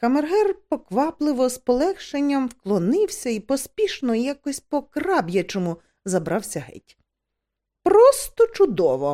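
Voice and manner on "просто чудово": loud, crying out. The duchess speaks up as the chamberlain hurries away, exclaiming. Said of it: "вигукнула герцогиня".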